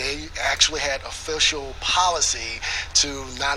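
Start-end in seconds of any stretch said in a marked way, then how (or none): none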